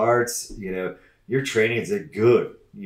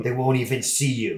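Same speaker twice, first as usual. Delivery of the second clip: little, evil, tempting voice. Acting out the little evil voice on your shoulder: little evil shoulder voice. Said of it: "the little evil voice on your shoulder".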